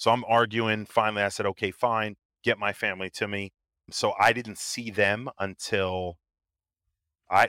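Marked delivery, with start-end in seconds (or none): none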